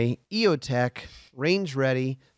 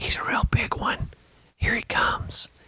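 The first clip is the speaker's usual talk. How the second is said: hushed, very slow, drawn-out whisper. Imitating hunters watching a deer approach: imitating hunters whispering. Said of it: "they keep whispering".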